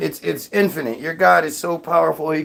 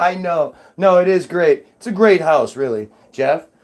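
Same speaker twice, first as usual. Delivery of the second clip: ordinary delivery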